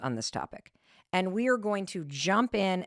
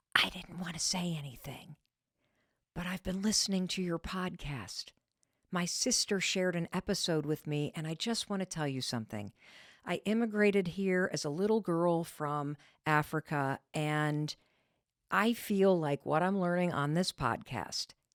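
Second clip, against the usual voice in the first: unhurried, private, voiced half-whisper stage whisper; 5 dB quieter than usual. Retelling what a woman leaned forward and said: imitating someone half-whispering. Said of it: "she was whispering".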